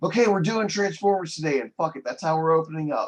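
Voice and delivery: mock loud blurt. Retelling own reply after fuming in silence: imitating own loud outburst. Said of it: "And then I was really loudly like".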